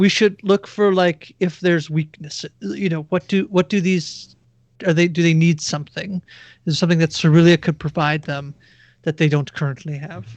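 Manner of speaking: voiced stage half-whisper. Playing a character who half-whispers a plan to the nearest companion: half-whispering in character. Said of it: "So I'm whispering to somebody".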